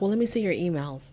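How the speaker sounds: put-on, very soft, quiet, cool, composed, unruffled. Retelling a partner's demand to see emails: imitating a cool, calm demand. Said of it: "she says very coolly, very calmly".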